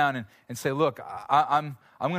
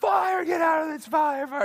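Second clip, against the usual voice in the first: mock very high, frantic, panicked shouted scream; 14 semitones higher than usual. Retelling waking people during a fire alarm: retelling a panicked scream. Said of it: "And I'm screaming".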